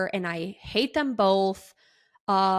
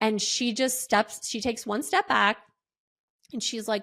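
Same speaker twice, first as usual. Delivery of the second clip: ordinary talk, nothing marked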